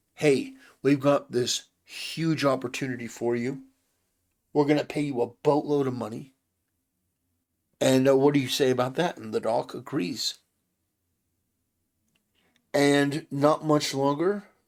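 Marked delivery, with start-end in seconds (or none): none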